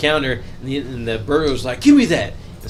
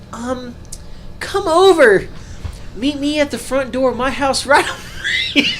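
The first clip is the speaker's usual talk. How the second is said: very high, squeaky put-on childlike voice; 10 semitones higher than usual. Retelling how Fester lures someone to his front door: put-on kid voice. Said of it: "he starts using the kid voice and he says".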